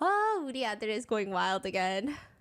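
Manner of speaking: usual speaking voice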